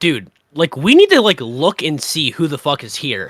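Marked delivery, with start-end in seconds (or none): none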